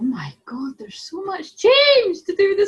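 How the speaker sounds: climbing high-pitched exclamation. Reading out a relationship card for saturday, high-pitched voice. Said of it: "sorry, my voice is so high".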